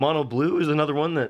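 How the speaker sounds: voice cracking. Talking through decks on a Sunday morning before coffee, voice cracking. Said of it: "excuse me, my voice cracked".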